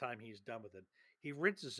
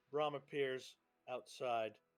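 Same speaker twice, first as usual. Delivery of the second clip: normal talking voice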